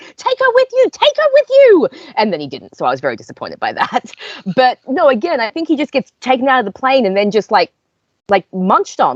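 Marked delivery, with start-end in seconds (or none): 0.2-1.9 shrill, very high screaming. Retelling reacting to a scene as a character gets taken, imitating screaming at the TV. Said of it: "I'm screaming at the TV".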